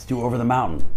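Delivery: plain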